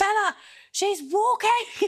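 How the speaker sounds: very high calling shout. Retelling how mum called up the stairs to the speaker, reenacted shouting upstairs. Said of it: "my mum starts shouting upstairs".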